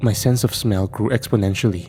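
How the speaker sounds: ordinary delivery, nothing marked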